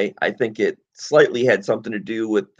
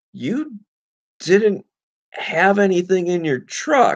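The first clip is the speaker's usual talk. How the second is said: mock bewildered, very high-pitched, super confused tone; 10 semitones higher than usual. Retelling what the man who searched their truck said, imitating a super confused tone. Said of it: "super confused".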